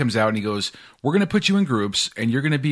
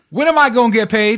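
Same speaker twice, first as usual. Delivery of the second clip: mock blurted yell, very high and shrill; 10 semitones higher, 6 dB louder than usual. Retelling a new hire's question at orientation: imitating someone yelling out. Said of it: "just to yell out".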